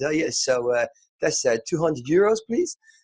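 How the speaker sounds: put-on Dutch accent.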